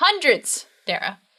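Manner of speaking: insistent, high yell, stressing the point. Answering another speaker's doubt about tattoos in the thirties: yelling. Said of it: "Don't have to yell".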